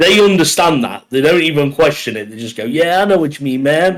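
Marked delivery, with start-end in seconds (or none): 2.6-4.0 put-on American accent, higher pitch. Imitating how americans answer when told about pop: imitating americans. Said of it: "best impression ever".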